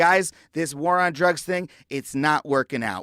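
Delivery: normal talking voice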